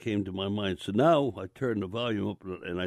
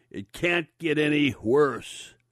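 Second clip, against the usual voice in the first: slow, loud, high, drawn-out shrieking cry; 6 semitones higher, 4 dB louder than usual. Recalling overhearing a woman, quoting her in a loud, shrieking voice. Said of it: "in a loud, shrieking voice".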